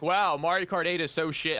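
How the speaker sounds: goofy, dopey, put-on dim-witted voice. Mimicking what people keep saying online, in a put-on dumb voice. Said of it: "I'm using kind of a dumb voice".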